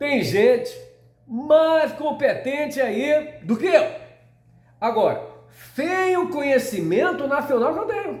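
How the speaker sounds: put-on voice, pitched way up, loud and slow. Quoting what he said, done in a Bolsonaro voice. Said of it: "na voz do Bolsonaro".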